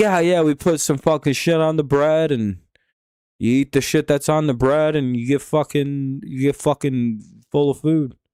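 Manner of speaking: put-on New York accent, regular-guy voice. Riffing while watching a ballgame, voicing imagined locals in a New York guy accent. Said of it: "That was my New York guy accent".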